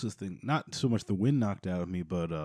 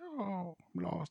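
put-on weird old woman voice, higher, quieter; 11 semitones higher, 9 dB quieter than usual. Voicing a lost, ghost-like woman character, in a weird old woman voice. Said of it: "like weird old woman".

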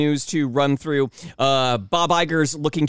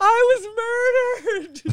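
very high, slow, drawn-out, swooping sing-song. Joking about a ride injury, doing Terry from Reno 911 voice. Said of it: "I could have done, what was it, Terry from, uh, from Reno nine one one".

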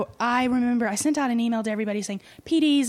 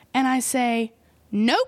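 ordinary talk

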